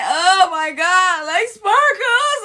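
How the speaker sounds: very slow, high, loud, drawn-out tearful blubbering. Retelling how a friend got in the car after shots: imitating someone crying. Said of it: "And she's crying".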